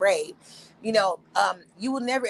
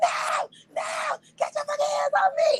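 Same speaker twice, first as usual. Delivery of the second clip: mock shrill, very high, panicked freak-out scream. Retelling being pushed onto a boat: retelling a panicked scream. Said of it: "I was screaming like a motherfucker was finna, like, kidnap me".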